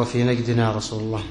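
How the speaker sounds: ordinary delivery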